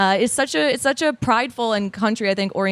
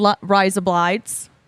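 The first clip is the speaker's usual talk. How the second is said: attempted put-on Australian accent. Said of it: "Do you reckon you guys could do an Australian accent?".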